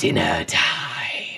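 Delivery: awful, very deep, creaky, rough monstrous creature voice. Game master voicing the figures speaking Infernal, in an awful voice. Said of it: "say in this awful kind of voices".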